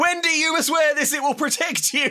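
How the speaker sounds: put-on very high-pitched, shrill shout. Retelling a scene where one character chases a car: imitating someone yelling.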